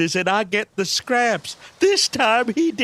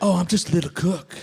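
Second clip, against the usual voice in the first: low, fake-humble, self-belittling voice; 4 semitones lower than usual. Imitating a movie character pretending to be a lowly cook: mock humble voice.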